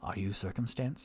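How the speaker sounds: quiet, hushed voice. Acting out a scene with an elf, this line in a hushed tone. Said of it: "in a hushed tone of voice".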